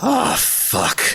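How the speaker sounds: shocked, stunned dismay, pitched very high. Voicing a character who looks up wide-eyed at a monster: wide-eyed stunned dismay. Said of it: "he looks up wide-eyed and just says".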